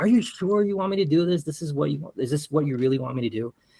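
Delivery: high, pressing, insistent called-out voice. Retelling a rappelling mishap, quoting own past shouting: retelling own shout. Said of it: "And so I'm shouting at them".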